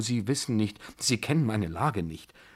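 usual speaking voice

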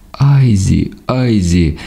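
high cry with one word drawn out long. Right after a gunshot, a different voice shouts to Aizi. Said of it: "кричав зовсім інший голос".

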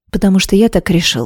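ordinary delivery, nothing marked

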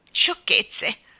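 muttered, grumbling under the breath. A great-grandfather answers a girl who wants to go home, grumbling. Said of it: "borbottò il bisnonno".

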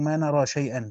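ordinary talk, nothing marked

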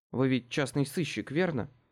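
plain

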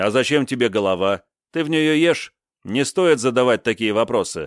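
ordinary delivery, nothing marked

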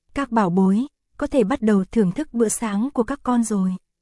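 plain reading voice

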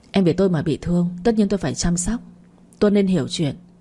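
ordinary delivery

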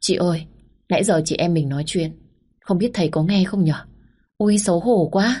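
ordinary delivery, nothing marked

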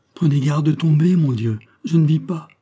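quavering, unsteady voice. He speaks to Rosette as her enormous horse is brought, in a trembling voice. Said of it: "lui dit d'une voix tremblante".

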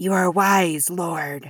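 slow, rasping, sibilant hissing voice. A narrator reads a messenger addressing a king, hissing voice. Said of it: "said the messenger in his hissing voice".

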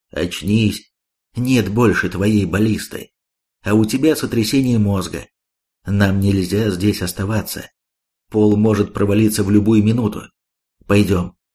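plain reading voice

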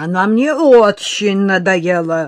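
loud, slow, spiteful, insistent repetition. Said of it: "со злобной настойчивостью повторил араб".

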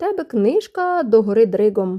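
ordinary delivery

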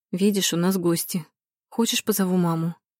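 ordinary delivery

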